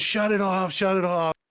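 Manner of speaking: mock urgent called-out yell, said twice. Retelling a yell to the engine crew to shut off the water: retelling own yell. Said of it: "I'm yelling to the engine".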